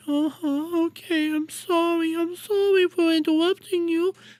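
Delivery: weak, high, small, defeated-sounding voice. Mocking a streamer who backed down on his own show, mocking Destiny's weak voice. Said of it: "he's weak".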